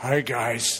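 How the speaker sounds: silly toy-animal voice, funny, low and put-on. Retelling how he voices his little plastic animals, in a funny low voice. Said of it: "he gets a funny low voice and says".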